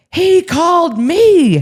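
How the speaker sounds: mock, very high-pitched, shrill yelling. Retelling how Paisley yelled back about answering the phone: imitating someone yelling. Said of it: "she's just yelling back at me".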